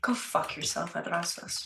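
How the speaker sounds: muttering under breath. Voicing a character who mutters an insult at Adrastos: muttered under his breath. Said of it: "under his breath, you hear him go".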